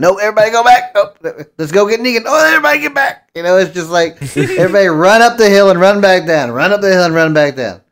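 put-on high, loud old prospector voice. Retelling a show's repeated plot, the speaker slips into an old prospector voice. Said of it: "you started turning into an old prospector".

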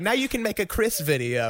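acted, high-pitched teasing words spoken through laughter. Retelling what the speaker's mother said, imitating someone laughing. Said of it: "They're like laughing".

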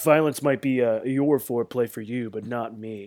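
ordinary delivery

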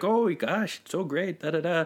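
super chipper, polite, sweet, high gushing voice.

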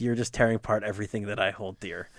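plain

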